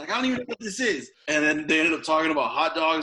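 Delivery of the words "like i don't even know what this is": comic put-on New York accent, high pitch. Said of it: "he talked in a New York ac-, accent".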